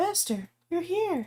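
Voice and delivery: little, whispery, high-pitched voice. Voicing the AI on screen greeting the players: Chihiro voice, whispery and high-pitched. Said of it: "a little whisper, a little high-pitched".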